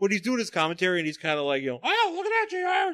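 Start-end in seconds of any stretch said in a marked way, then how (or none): 1.8-2.9 creepy, very high, slow, squeaky commentator voice. Imitating Jerry Lawler doing his commentary: high creepy Jerry Lawler voice. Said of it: "does Jerry Lawler have a high, creepy voice like that".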